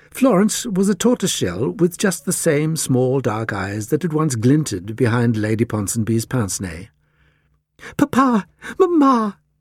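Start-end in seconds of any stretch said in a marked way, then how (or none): 7.9-9.3 eager, excited cry pitched very high. The Cat Lady calls out to Papa and Mama with an excited cry. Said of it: "cried the Cat Lady excitedly".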